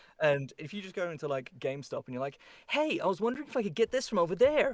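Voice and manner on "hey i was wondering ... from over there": high, fake American accent, anime-hero style. Retelling asking for something in a GameStop, put-on American accent. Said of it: "my one American accent".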